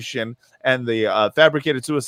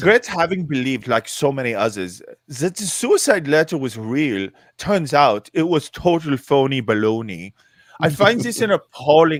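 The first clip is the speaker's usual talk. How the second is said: put-on, attempted German accent; 2 semitones higher than usual. Speaker reading out a quoted statement, in a German accent. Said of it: "how would you do a German accent".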